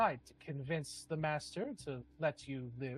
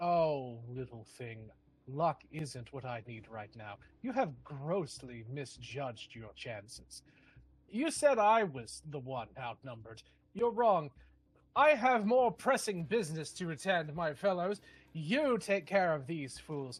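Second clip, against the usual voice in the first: amused, laughing, taunting character voice; 4 dB louder than usual. Voicing a character who laughs and looks down at a player: laughing taunt in character. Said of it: "He laughs and looks down at you and says".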